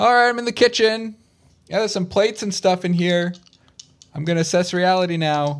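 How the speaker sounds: reassuring, comforting distant yell, very high. Voicing a character searching a house, calling back to others: yelling back comfortingly. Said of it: "he will kind of yell back comfortingly".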